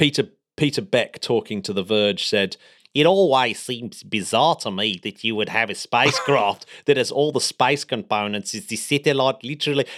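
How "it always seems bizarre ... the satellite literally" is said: put-on South African accent. Reading out Peter Beck's quote to The Verge, Peter Beck in South African accent. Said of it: "No, he's not South African, is he?".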